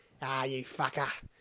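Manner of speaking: bad put-on Cockney man voice, drifting Australian. Praising a film's Cockney geezer accent, then trying it, terrible Cockney accent. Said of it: "that was terrible Cockney".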